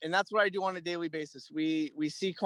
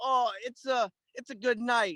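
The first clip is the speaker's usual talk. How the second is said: put-on Italian accent, pitched up; 6 semitones higher than usual. Quoting how he always talked, in an imitated Italian accent. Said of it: "in an Italian accent".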